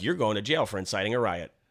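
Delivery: ordinary talk, nothing marked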